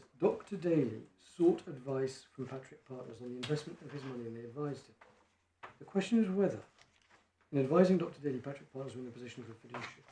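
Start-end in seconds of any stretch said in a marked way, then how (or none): none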